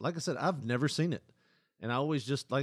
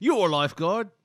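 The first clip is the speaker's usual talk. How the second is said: mocking, condescending Australian accent, higher and louder; 6 semitones higher, 9 dB louder than usual. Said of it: "come off as condescending when they go".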